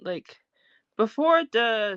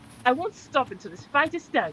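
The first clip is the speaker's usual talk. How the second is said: put-on plain, straightforward delivery in a British accent; 3 semitones higher than usual. Quoting a line the character Kate said: Kate's British accent. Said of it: "she said that in a British accent".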